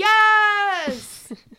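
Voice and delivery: very high, drawn-out, stretched yelling. Reacting to a co-host's plan to watch Veronica Mars: yelling. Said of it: "Sorry for yelling directly into my microphone".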